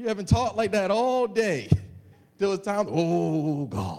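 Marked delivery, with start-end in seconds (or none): 2.9-4.0 put-on, low, drawn-out voice for praying aloud. Mocking how everybody prays in public, in a mock prayer voice. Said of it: "everybody got your prayer voice".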